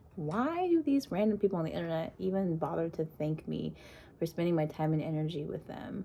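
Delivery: ordinary talk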